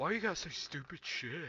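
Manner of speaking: put-on annoyed, complaining tone. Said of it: "he's like".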